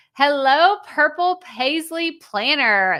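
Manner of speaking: carefully enunciated delivery. Greeting viewers by a tongue-twister name, very slow and intentional. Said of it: "I have to like say it very slowly, very intentionally".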